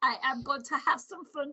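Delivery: put-on spoken in a German accent. Voicing a bear character, Mister Barista Bar, for listeners; Barista Bar's German accent. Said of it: "I have to put a German accent on him".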